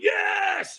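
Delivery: acted, very high, all-out adrenaline-fueled scream. Retelling how he answered the coach: imitating his own scream. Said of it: "I threw my hands in the air and I screamed".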